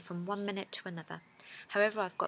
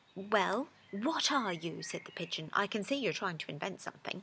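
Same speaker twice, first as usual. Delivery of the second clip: plain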